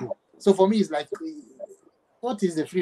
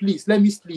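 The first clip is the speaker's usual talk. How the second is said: put-on pleading, higher and louder; 4 semitones higher, 6 dB louder than usual. Retelling being sent out at night, imitating own begging. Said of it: "I started begging".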